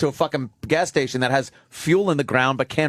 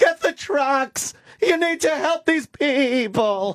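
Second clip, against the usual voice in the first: put-on female yell, pitched higher; 12 semitones higher than usual. Retelling a woman in distress on the news: imitating a woman yelling. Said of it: "There's some woman that was yelling at".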